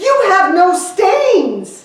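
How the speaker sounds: eager, excited, high, loud, swooping and drawn-out outburst. Reading a story aloud, Blotch runs up to strangers: excited exclamation. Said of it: "he exclaimed".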